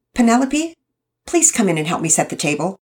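sharp, sharp-toned voice. Mama calls the girl in to help set the table: sharp. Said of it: "Mama Peters sounded sharp".

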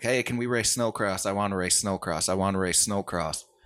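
put-on insistent childlike pleading, repeated over and over. Retelling how he kept begging to race as a kid: imitating own childhood begging. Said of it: "I just kept begging".

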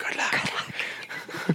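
hushed, soft, barely audible whisper. Retelling how a man answers a woman's words, whispered. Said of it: "he just whispers".

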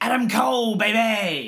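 put-on "baby" stretched long, high-pitched. Asked to do an impression of a wrestler, give an Adam Cole impression. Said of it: "Can you do an impression of a wrestler?".

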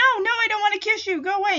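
put-on high-pitched, fast, nervous girlish voice. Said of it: "She's like".

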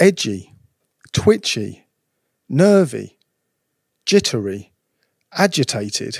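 slow read-through. Speaker reads a list of related words aloud to listeners, reading slowly. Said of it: "I'm just going to read these slowly".

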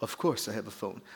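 put-on clumsy British accent, very low and hushed. Retelling the Rolls driver's reply to the Yugo owner: bad British accent. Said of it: "trying to do a British accent".

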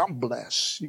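a bit of sass and swagger, with attitude. Showing the audience how to say the phrase, with a little attitude. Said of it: "You got to do it with a little attitude".

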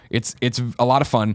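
normal talking voice

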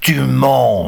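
loud bellowing roar with "mens" stretched long. A captor answers a young girl, roaring. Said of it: "rugit le bohémien".

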